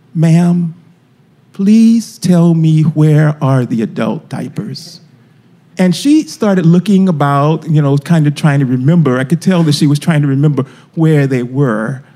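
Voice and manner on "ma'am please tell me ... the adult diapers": very low, slow, submissive voice in deepest register. Retelling what they said after going over to a woman, in their lowest voice. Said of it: "with my lowest voice".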